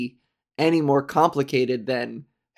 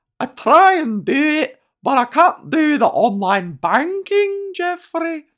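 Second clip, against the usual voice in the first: very high, loud attempted Scottish accent; 13 semitones higher, 5 dB louder than usual. Quoting what a woman said, in an imitated scottish accent. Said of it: "I'm going to try a Scottish accent".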